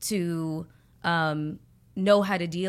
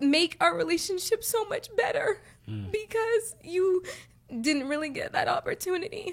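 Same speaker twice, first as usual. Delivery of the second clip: very high, choked-up, teary voice on the verge of crying; 13 semitones higher than usual. Talking about a mother's hard life, holding back tears. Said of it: "I don't wanna start crying".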